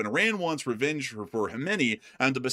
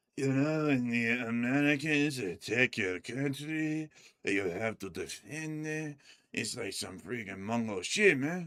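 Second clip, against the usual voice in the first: slow, drawn-out put-on street-talk voice; 6 dB quieter than usual.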